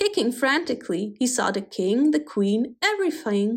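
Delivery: ordinary delivery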